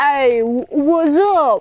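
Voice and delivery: clumsy, bad put-on Austrian accent. Recapping a story, speaker voices the taxi driver's greeting; bad accent impression. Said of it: "That's such a bad accent impression".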